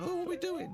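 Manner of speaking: tiny, very high cartoon-bee voice. Joking about bees falling out of the sky: cartoon bee voice. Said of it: "Like in a cartoon".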